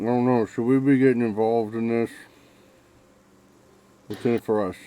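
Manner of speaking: talking with mouth full. [name], mid-bite of his omelet, speaks to Adam, [name] talking with mouth full. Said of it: "says with a full mouth".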